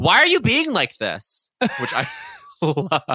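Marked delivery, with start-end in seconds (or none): 0.0-1.5 very high shriek with wild, swooping pitch swings. Recapping an episode where Leah screams at Dorinda: imitating Leah's scream. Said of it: "Leah screams to Dorinda".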